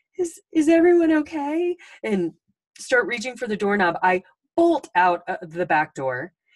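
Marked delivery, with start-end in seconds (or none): 0.2-1.8 very high, squeaky, shrill scared voice. Retelling backing away at eighteen, speaker quotes their younger self in a very high-pitched voice. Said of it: "in the most high-pitched voice said".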